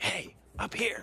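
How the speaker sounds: very hoarse, very high whispered hiss. A player character calls up to a child from above; hoarse whispered hiss. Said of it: "in a very hoarse whisper, hiss at the child".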